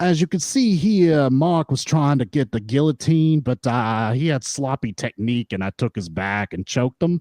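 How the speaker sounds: put-on New York accent. Describing a man who narrates his own matches, in his thick New York accent. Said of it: "his thick New York accent".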